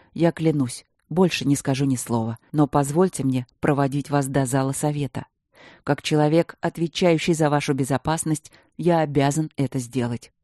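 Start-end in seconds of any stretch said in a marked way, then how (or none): none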